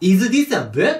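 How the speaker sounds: pitch rising at the end on book. Showing how the end of the question went up, rising pitch on book. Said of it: "最後が上がってたんですよ。こうやって".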